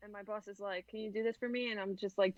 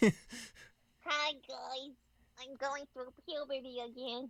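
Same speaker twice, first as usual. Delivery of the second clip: animated cartoon kid voice; 4 semitones higher than usual. Joking to the guys about going through puberty again, in a Bart Simpson voice. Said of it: "Sound like Bart Simpson".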